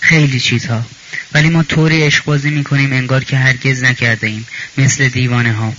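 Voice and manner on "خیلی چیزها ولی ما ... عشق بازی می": usual speaking voice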